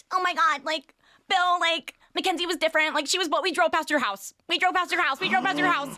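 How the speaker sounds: squeaky, mousy voice, very high and loud. Retelling what a mom said to a celebrity: imitating mom's high-pitched voice. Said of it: "my mom has a very high-pitched voice".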